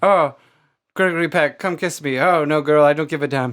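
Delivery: put-on old-fashioned mid-Atlantic movie-star accent. Joking that they grew up with it, the speaker acts a little scene: mid-Atlantic accent. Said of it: "So I have that mid Atlantic accent".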